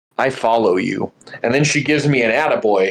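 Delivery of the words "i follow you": put-on woman's whispering voice. Retelling how a stranger at the grocery store approached: imitating a woman whispering. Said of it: "she whispers, she goes".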